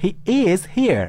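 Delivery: emphatic, heavy stress leaned hard on is. Showing be with emphasis, meaning he really is here: strong stress on is. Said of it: "Di sini ada be, okay, with emphasis".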